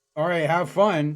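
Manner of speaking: heavily sarcastic, dripping with sarcasm, acted out. Retelling what the store worker said to the speaker: mimicking a sarcastic tone. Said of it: "in like the most sarcastic tone ever".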